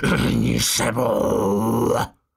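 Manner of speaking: rough, roaring, bellowed voice with a rasp. Narrator reads a woman with a trembling pistol roaring at a man in bed. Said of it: "Zařvala Rašple".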